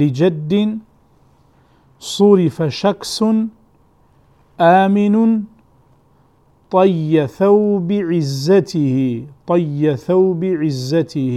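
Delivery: very slow, deliberate, word-by-word dictation reading.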